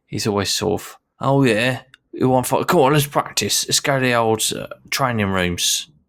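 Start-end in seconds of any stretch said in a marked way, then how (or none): 1.2-5.8 put-on high-pitched Cockney geezer accent. Describing a character who always wants to fight, quote him in a put-on Cockney accent. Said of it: "is depicted as having a bit of a Cockney accent".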